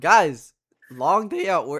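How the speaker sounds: voice breaking on words. Talking to the others after a long day at work: voice cracking. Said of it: "Voice crack".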